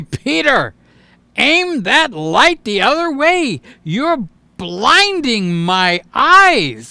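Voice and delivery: put-on irritation, slow and angry, "eyes" stretched long. Acting out a helper complaining about a blinding light: imitating someone angry. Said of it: "James is gonna get angry".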